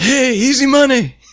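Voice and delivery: high-pitched yelling, called out loud.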